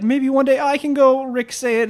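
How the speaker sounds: squeaky, high-pitched sidekick voice. Acting out a joke game scene, speaking as Morty: imitating Morty. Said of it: "And then Morty would be like".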